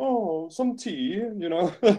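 put-on posh English accent. Imagining how someone might sound after picking up an accent, Downton Abbey English accent. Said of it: "the Downton Abbey version?".

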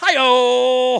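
very loud, high, drawn-out announcer call. Doing an impression on request. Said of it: "Ed McMahon".

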